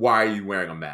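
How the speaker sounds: half-muttered under the breath. Retelling a stranger's remark in a liquor store: imitating someone muttering under breath. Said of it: "but it under her breath, kind of, but loud enough".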